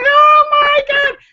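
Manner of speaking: screaming in horror, high, loud, slow. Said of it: "they're screaming".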